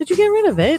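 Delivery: British accent. Searching for a missing button, speak in an accidental british accent. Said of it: "Did you just turn British?".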